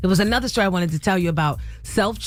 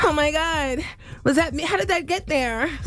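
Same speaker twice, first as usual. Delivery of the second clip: put-on, high-pitched, shocked, flustered distress; 9 semitones higher than usual. On the radio, acting it out in a put-on Karen distress tone. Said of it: "get that Karen distress tone".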